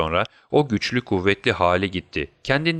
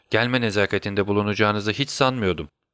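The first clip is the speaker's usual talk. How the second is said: ordinary delivery, nothing marked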